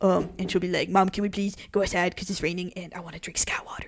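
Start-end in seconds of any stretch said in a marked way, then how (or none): 0.9-3.9 voice of a dog. Imagining what their dog says to them, in Obvi the dog's voice. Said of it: "her voice is more like this".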